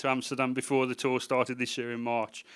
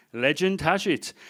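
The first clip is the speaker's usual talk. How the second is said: put-on Dutch accent, tour guide voice; 4 semitones higher than usual. Retelling a tour guide approaching a bridge, put-on Dutch accent. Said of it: "that's as far as I'm going to go with the Dutch accent".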